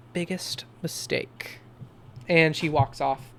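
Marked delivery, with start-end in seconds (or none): 0.1-1.6 close, breathy, barely voiced hushed whisper. Voicing Jennifer as she hugs the player's character, whispering. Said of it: "she whispers here".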